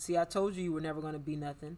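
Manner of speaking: plain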